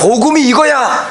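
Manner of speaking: high, loud shouted delivery.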